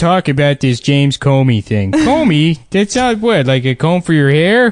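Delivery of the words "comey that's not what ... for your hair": put-on cartoon dad voice, higher. Joking about a news story in a voice: Dundalk Homer voice. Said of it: "a Dundalk Homer".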